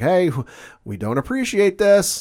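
put-on loud rising shouted protest. Retelling a character yelling so another can hear: imitating someone yelling. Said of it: "he starts yelling".

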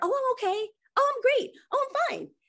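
squeaky, very high-pitched dismissive, deflecting voice. Describing a habit, the speaker imitates their own reply, in a high-pitched voice. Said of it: "Usually I get that high pitched voice".

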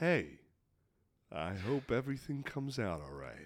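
very soft, very quiet, low intimate voice. Demonstrating the advice to lower tone and volume slightly: slightly lower, quieter voice. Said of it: "lower the tone and volume of your voice slightly".

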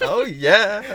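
put-on very high, eager, enthusiastic gushing girl voice. Trying the line again, way more enthusiastic: girl voice. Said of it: "Way more enthusiastic than that".

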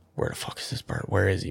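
acted anxious tone, quiet. Retelling hunting for a dropped bird, the speaker acts out nervous searching. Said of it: "I'm getting real nervous".

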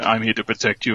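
put-on hardline Russian voice. Imitating Steel Wolf guarding someone: imitating Steel Wolf. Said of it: "he is a hardline Russian person".

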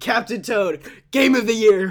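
high, loud, excited, belted out. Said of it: "he just was always saying".

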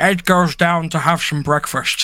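deliberately bad put-on voice drifting into Irish accent. Narrating a day in Ed's life: shit Sean Connery voice. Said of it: "I'll do my shit Sean Connery voice".

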